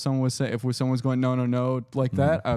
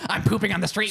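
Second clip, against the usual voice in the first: put-on crazy man voice, pitched higher; 8 semitones higher than usual. Acting out a crazy man talking on the street: acting a crazy man. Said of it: "A crazy guy would be like".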